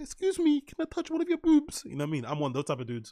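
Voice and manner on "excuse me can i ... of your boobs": mock very high, timid, polite, meek voice. Acting out his own way of talking to girls: put-on meek voice. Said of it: "I always have to be meek and be like".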